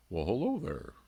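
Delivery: gentle bear voice. Host replying to a viewer comment that called him Papa Bear: bear impersonation. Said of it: "it's my my bear impersonation".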